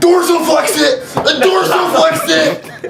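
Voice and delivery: coach-like barking delivery.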